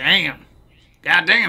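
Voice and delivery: put-on, fake American accent. Joking about a beautiful game: put-on American accent. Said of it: "Is that your American accent?".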